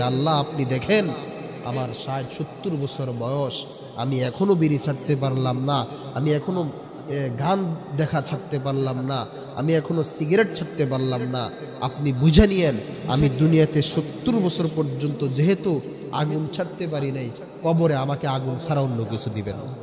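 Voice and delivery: ordinary talk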